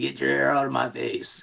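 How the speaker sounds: manly, gruff, creaky, raspy smoker's voice. Retelling what his wife says when his hair is in her face: imitating wife, manly smoker voice.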